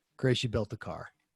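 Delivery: fake downcast, defeated, dejected tone. Retelling a reply after hearing the temperature reading, put-on dejected voice. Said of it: "I put on my dejected voice".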